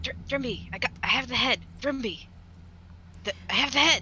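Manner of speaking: stumbling, halting stage whisper. Searching the grounds for thrimby, the speaker's character calls out to him: whispering. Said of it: "I'm kind of like whispering like".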